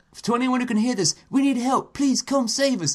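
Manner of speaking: put-on sort-of Australian accent, very high. Retelling a call for help heard in a game, in a sort of Australian accent. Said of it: "sort of Australianish accent".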